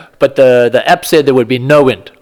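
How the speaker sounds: ordinary talk, nothing marked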